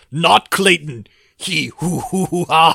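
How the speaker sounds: very loud, high, slow jungle-style bellow. Quoting a line from a boss fight cutscene: Tarzan voice. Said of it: "As Tarzan puts it".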